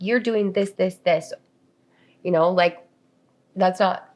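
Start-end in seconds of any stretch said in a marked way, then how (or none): 0.0-1.3 mock blaming, on-the-attack jabs, accusing tone. Imitating how not to voice needs in a relationship: imitating an attacking tone. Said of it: "where I'm not just attacking you".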